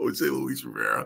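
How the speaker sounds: low, creaky laugh through a word.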